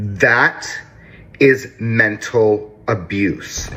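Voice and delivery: slow, deliberate, with anger held in. Addressing a mother directly, speaking slowly to hold back anger. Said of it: "I'm speaking slowly so I don't tear down".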